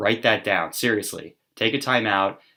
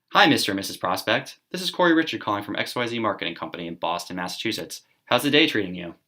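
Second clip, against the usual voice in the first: self-assured, confident, friendly tone. Showing the cold call greeting in a role play: confident and friendly. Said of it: "We say this with confidence".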